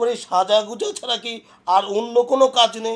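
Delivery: shouting. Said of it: "এত চিল্লাচিল্লি কেন করতেছো".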